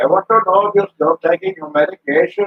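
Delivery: high, put-on Indian accent. Describing visits to their doctor, the speaker quotes the doctor: imitating an indian accent. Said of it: "I guess you can always imitate them".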